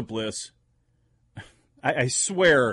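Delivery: plain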